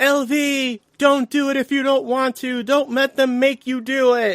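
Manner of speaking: high-pitched yell, called out. Retelling a movie scene where he yells at her: imitating someone yelling. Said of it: "he's literally yelling at her".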